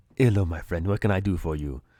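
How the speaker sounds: Jamaican-sounding voice. Telling how you rock up to the Rastafarian guy, the speaker voices him: Rastafarian vendor voice. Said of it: "you rock up to the the Rastafarian guy".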